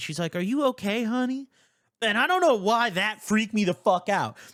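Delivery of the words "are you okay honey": high, sweet, caring voice full of concern. Retelling a front desk worker's question: imitating a sweet voice. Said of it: "saying it in such a sweet way".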